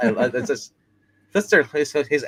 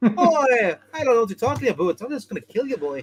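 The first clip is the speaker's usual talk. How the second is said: very high put-on Canadian accent; 11 semitones higher than usual. Showing how the group started talking after a TV series, put-on Canadian-sounding accent. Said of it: "Now you sound Canadian".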